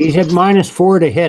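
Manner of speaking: sudden high, loud yell. Speaking to the players during a game, yelling. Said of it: "I didn't mean to yell".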